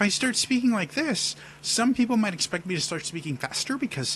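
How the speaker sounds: high, shifted-up speaking register. Demonstrating how a higher voice changes expectations: higher-pitched voice. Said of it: "speaking in a higher register".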